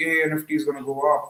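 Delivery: plain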